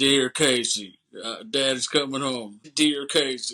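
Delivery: put-on slow, cheesy, corny movie voiceover accent. Recapping a movie, the speaker quotes the prisoner's letter voiceover: cheesy voiceover accent. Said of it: "he does that cheesy voiceover with that accent".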